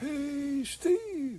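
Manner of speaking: very high distant yell. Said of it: "this distant voice yelling".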